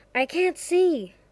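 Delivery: sudden, blurted words, high pitch. Pulled through dark trees by Jericho, the narrator speaks up, blurting out. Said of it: "so I blurted".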